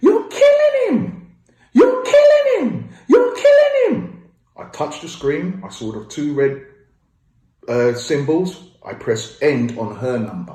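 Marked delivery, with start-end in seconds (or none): 0.0-4.3 shrill, very loud, piercing scream at top pitch. Retelling a phone call where the sister screamed at the doctor: imitating sister's high-pitched screaming. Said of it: "My sister screamed out".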